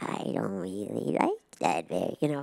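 low, raspy, scratchy little gremlin grumble. Speaker showing the gremlin voice she'd like to do, in a low scratchy voice. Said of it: "(IN LOW SCRATCHY VOICE)".

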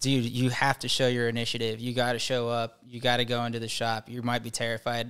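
ordinary delivery

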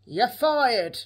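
put-on gruff voice. Doing a quick impression while planning to watch The Apprentice: Alan Sugar impression. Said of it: "I'm gonna do Alan Sugar impression".

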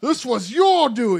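very loud, strong, commanding booming voice. Game master voices a town noble accusing the bride's uncle; booming strong voice. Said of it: "A strong voice booms out".

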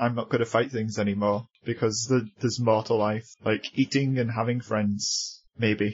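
normal talking voice

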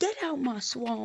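slow monster voice, each word drawn out. Imagining being chased around the basement by a boss: Shrek voice. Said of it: "got get chased around by Shrek, saying".

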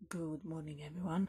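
very quiet, hushed, low voice. Greeting everyone in the morning while flatmates are still asleep, keeping voice really low. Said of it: "keeping my voice really low".

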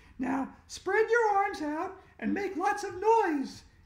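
very high-pitched shout. Narrator reads Andrea telling Emily on her back what to do, shouting. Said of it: "Andrea shouted".

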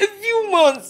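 crying, tearful. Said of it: "Don't cry, please".

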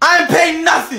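full-on yelling. A library patron told to lower their voice, answering the librarian: shouting. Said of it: "Inside the voices".

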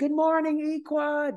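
acted-out scream, very high and stretched long. Retelling greeting the barracks early for fun: imitating own screaming.

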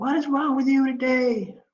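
mock very high, overbearing, drawn-out scream. Retelling how a new EMT screams at an old patient: imitating an EMT screaming. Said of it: "screaming at grandma".

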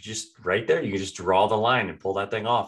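normal talking voice

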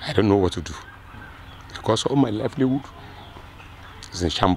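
distraught, halting voice breaking up mid-phrase. A farmer whose property a rainstorm destroyed tells a reporter, emotional and distraught. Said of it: "I'm sorry that I'm being emotional".

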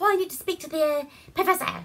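put-on, bad, old-movie style English accent. Retelling a bad movie scene, imitating a fake English accent. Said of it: "some kind of fucked up Englishy accent".

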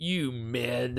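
contemptuous. Trying out a two-word line together, saying it with a bunch of contempt. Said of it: "say it with a bunch of contempt".

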